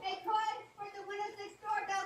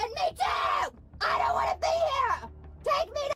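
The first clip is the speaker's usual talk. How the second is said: full-throated, very loud shrieking scream; 6 semitones higher, 9 dB louder than usual. A woman facing handcuffs protests, screaming. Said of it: "is she purposefully screaming like that".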